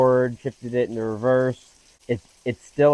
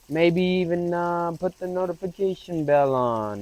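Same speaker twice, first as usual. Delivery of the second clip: terrible fake Italian accent, pitched up; 6 semitones higher than usual. YouTuber closing out a video for viewers, terrible fake Italian accent. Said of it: "that was a terrible fake Italian accent".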